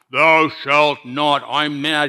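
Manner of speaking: slow, harsh, tyrannical god voice. Speaker voicing how people picture god behind the commandments, harsh tyrannical god voice. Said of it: "You'll hear the harsh voice of a tyrannical God".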